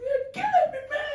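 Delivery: very high put-on voice, near falsetto. Imitating R. Kelly during his scandal: R. Kelly impression. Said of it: "When he's like".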